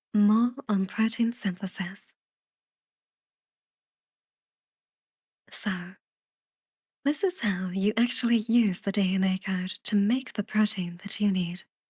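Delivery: smart-speaker voice-assistant delivery. Explaining protein synthesis, doing an Alexa voice. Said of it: "I'm doing my Alexa voice".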